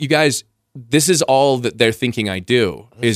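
usual speaking voice

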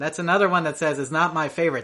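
normal talking voice

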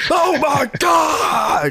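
very high, all-out shouting at full force. Talking about the NXT commentary team, making fun of the announcer: Mauro Ranallo shouting impression. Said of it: "Mauro Ranallo shouting his ass off".

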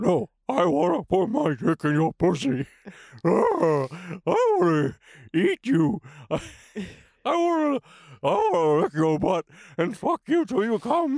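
loud, badly done cartoon dog voice. Joking about what the cartoon dog would say: bad Scooby-Doo impression. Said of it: "This is the worst Scooby-Doo impression".

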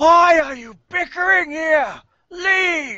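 very high, furious ghost-elf voice. Voicing an elf ghost growing larger as the party bickers: angry ghost elf voice. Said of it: "She seems to be growing slightly larger".

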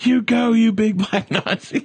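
put-on very high, stretched-out, drawn-out yell. Retelling shouting at someone seen from the stands: retelling a scream. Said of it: "we would scream".

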